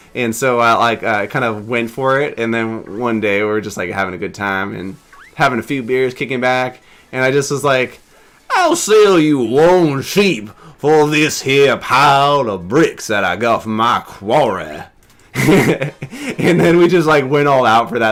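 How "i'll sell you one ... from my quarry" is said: put-on slow, old Southern man drawl. Retelling his own offer while having beers with others, in an old Southern man accent. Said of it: "this really fun accent to do, where it's just like an old Southern man".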